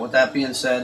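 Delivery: plain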